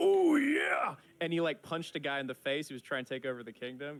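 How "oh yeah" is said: very loud, high hype yell at full blast. Retelling a player's roleplay line: Macho Man Randy Savage voice. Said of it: "he was R P ing as Macho Man Randy Savage".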